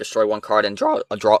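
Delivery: voice cracking and breaking mid-speech. Reading card effects aloud during a game, voice cracking. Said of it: "Excuse me, voice crack".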